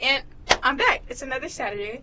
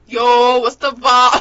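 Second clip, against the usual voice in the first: very loud fake New York accent; 14 dB louder than usual. Mimicking the other speaker's New York accent to get on his level, put-on New York accent. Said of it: "Let me get on your level".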